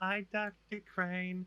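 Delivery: shrill, very high-pitched put-on character voice. Retelling a cartoon scene as Harley greets Scarecrow: Harley Quinn voice. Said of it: "they walk past Harley's cell and she's just like".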